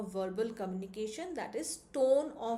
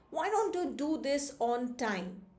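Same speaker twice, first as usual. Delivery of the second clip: furious, very angry, raised voice; 3 semitones higher than usual. Explaining what tone of voice conveys, demonstrating an angry raised voice. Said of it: "very angry and raises the voice".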